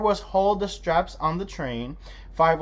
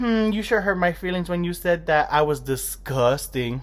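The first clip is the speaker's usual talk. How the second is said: normal talking voice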